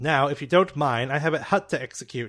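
loud, cold officer voice.

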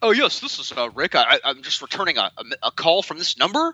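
thoroughly indignant tone.

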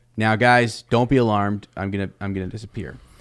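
usual speaking voice

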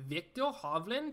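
clumsy, bad, put-on Norwegian accent. Previewing a golf pick, saying the player's name in a bad Norwegian accent. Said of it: "That was the worst Norwegian accent of all time".

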